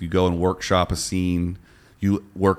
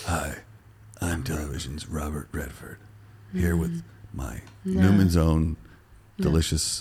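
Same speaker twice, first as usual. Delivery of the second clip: put-on older-sounding voice, slow and swooping; 3 semitones lower, 4 dB quieter than usual. Redoing a Robert Redford impression, older: older Robert Redford voice. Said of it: "do it older".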